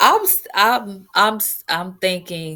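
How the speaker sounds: slow stutter with halting, repeated starts on s-. Asked how they feel about it, answering while stuttering. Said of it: "I'm stuttering too".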